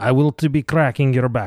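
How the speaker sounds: put-on Russian accent. Still joking with the microphone, in a mock russian accent. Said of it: "my Russian accent is not as good".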